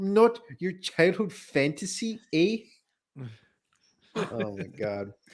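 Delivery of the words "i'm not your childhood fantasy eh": thick put-on Canadian accent, pitched up. Mocking how a woman talked, in a thick put-on accent. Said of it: "It's such a thick accent".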